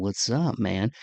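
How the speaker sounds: smooth late-night jazz radio DJ voice. Podcast host speaking to listeners before introducing this week's guest, late night jazz radio voice. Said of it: "Got a little late night jazz radio voice going on".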